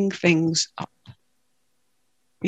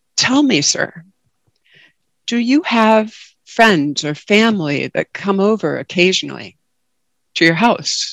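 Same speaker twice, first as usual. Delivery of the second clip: ordinary talk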